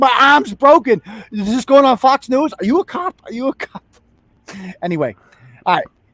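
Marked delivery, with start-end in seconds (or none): 0.0-3.8 toned-down, high-pitched mild scream. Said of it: "hears him screaming from the car".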